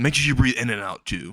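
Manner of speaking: plain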